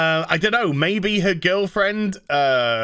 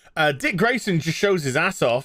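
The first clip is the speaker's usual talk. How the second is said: ordinary delivery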